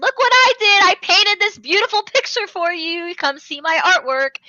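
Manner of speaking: laughing, gloating, high, loud, gleeful singsong taunt. Recapping a scene where a character hunts for Itadori, imitating a gleeful laughing taunt. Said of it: "laughing as he's doing it".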